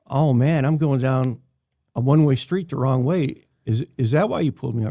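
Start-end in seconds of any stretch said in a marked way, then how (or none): none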